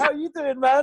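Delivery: imitated voice, high and easy like a cool American. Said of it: "Like that".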